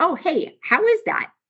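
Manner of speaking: high-pitched, amazed tone. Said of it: "everyone's like".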